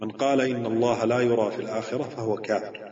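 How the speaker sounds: ordinary talk, nothing marked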